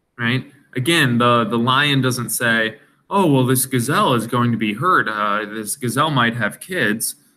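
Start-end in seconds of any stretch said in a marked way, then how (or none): none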